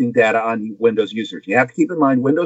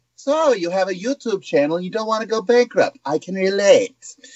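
high, put-on villainous official-sounding voice. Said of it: "the head of the F T C was sitting there wearing a monocle".

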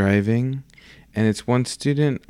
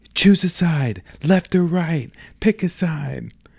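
put-on scream, higher pitch; 8 semitones higher than usual. Retelling a scene where a teacher speeds toward a fork: imitating someone screaming. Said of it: "just keeps screaming".

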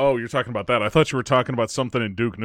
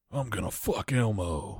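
deep, raspy character voice, kept soft; 8 dB quieter than usual. Showing how to make the Duke voice fun, the speaker says something weird in Duke voice. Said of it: "say weird shit with the Duke voice".

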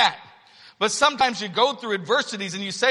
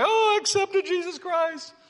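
pitched-up, tearful, weepy crying voice; 9 semitones higher than usual. Retelling what a nurse said in a hospital room: imitating someone crying. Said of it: "get into tears and she would begin to cry".

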